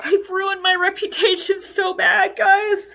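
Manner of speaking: high, tearful weeping through happy tears. Speaker thanks viewers in chat who sent money, crying happy tears. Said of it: "Sorry, this is happy tears".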